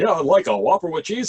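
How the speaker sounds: on-air radio DJ announcer voice. Speaker recalling a drive-through customer ordering, in a radio announcer voice. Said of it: "a guy who was like a radio announcer".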